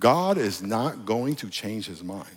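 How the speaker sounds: slow, drawn-out, hushed, deliberate emphasis. Speaker repeats a point to the audience, saying it slow. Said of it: "let me say that slow".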